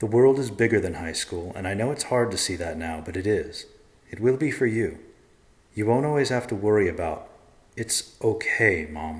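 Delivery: ordinary delivery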